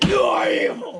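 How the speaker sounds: loud, authoritative, commanding voice. During a dice game, voicing a new figure who speaks in a commanding voice. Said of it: "a much more commanding voice says".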